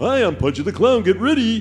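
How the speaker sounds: squeaky voice, high-pitched and loud. Asked to do the voice, the speaker recalls the game's non-funny Pudgy the Clown voice. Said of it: "The non-funny voice was".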